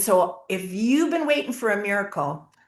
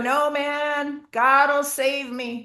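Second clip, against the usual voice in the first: mock, slow, high, drawn-out calling voice; 6 semitones higher than usual. Telling a story of a man answering a Coast Guard boat from his window, retelling a shout. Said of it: "he shouts out the window".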